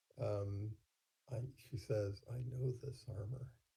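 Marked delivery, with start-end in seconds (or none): 2.3-3.5 soft, hushed mutter under the breath. Voicing her line so that only Runt catches it: muttered under her breath. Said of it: "you hear her say under her breath".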